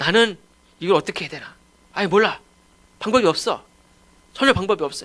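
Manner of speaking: put-on flustered young person voice.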